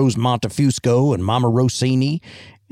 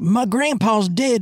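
put-on very high 1950s kid actor voice, old-movie kid diction; 10 semitones higher than usual. Quoting what the little boy said, in Jimmy Carter's 1950s kid actor voice. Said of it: "He's definitely got 50s kid actor voice".

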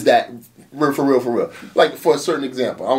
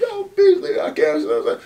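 put-on hoarse voice, much higher. Recalling how his voice sounded after an event; imitating his own hoarse voice. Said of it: "my voice was hoarse".

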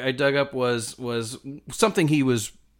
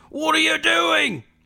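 put-on English accent, much higher; 4 dB louder than usual. Speaker retells a policeman's words from a story: English accent. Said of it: "very good English accent".

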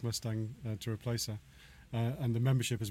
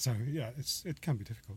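emotional, welling-up tearful voice, close to tears; 5 dB quieter than usual. Speaker talking about the kids they support, welling up. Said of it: "I'm welling up".

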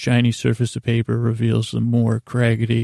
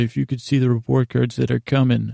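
ordinary delivery

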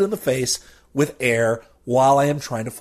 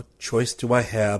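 muttering under the breath, mumbled; 4 semitones lower, 3 dB quieter than usual. Reading a story aloud, the narrator muttering the character's reply. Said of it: "I mutter".

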